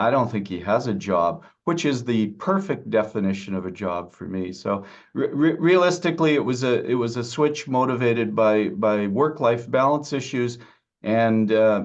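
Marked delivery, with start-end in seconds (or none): 0.0-1.4 sheepish, embarrassed, small voice. A father retelling his son's answer to a question, imitating an embarrassed voice. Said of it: "he says in an embarrassed voice".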